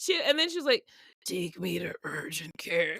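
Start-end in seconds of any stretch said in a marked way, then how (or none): 1.2-3.0 acted weak voice, words barely coming out. Retelling the mother asking to go to urgent care: imitating someone who can barely talk. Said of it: "she could barely talk".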